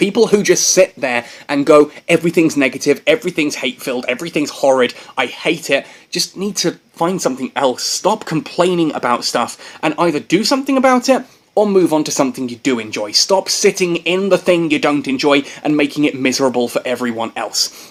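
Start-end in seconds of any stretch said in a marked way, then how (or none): none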